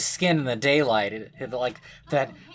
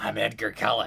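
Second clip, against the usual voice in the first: put-on froggy voice, lower; 4 semitones lower, 4 dB quieter than usual. Acting out a made-up secret vampire who warns someone off: Edgar Cullen froggy voice. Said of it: "he has that kind of froggy voice".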